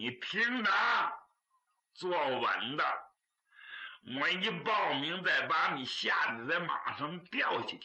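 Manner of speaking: ordinary delivery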